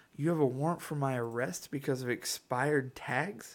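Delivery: mock half-sarcastic, sardonic tone. Speaker retelling their reply to a man with a warrant: retelling a sarcastic reply. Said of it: "almost in a sarcastic tone said".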